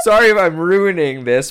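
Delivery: high, loud, giggling, laughing through words.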